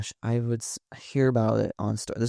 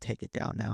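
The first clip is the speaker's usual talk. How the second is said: put-on stern voice, quieter; 8 dB quieter than usual. Retelling own reply after being tagged in comments: imitating a stern demand. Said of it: "a stern".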